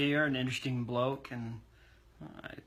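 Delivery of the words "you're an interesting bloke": plain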